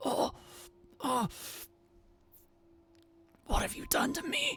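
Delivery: pleading beast voice fading out. Voicing a beast as the drink goes down: pleading beast voice fading out. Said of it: "It has a pleading sound to it".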